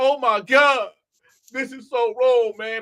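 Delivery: put-on fake crying, mock sobbing. A speaker retells how a man reacted, imitating fake crying. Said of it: "Big crocodile tears".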